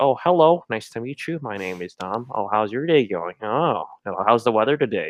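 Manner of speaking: put-on bland, safe polite tone. Describing how he acts at level-one friendship, doing mock bland politeness. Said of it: "very like boring, bland, politically safe".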